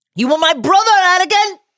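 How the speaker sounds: very high, heartbroken, anguished shout. Speaker quoting a mentor's cry to his former pupil: retelling a shout. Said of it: "He shouted on Mustafar".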